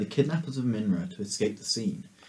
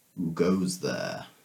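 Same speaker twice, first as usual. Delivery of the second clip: deep, authoritative, commanding dragon voice; 5 semitones lower than usual. Describing a scene to the players, speaker voices a dragon: deep commanding tone. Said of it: "you hear in a deep, um, commanding tone".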